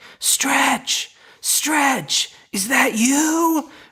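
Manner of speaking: very high, very slow stage whisper. Acting out calling for a friend in a dark building: imitating a whisper shout. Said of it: "Whisper shouting for someone".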